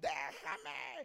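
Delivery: low, swooping demonic voice in a man's tone.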